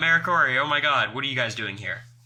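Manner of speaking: mock thrilled, fast, gushing, super excited voice. Retelling how a fan greeted them: imitating an excited greeting. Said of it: "in that same kind of tone, was super excited".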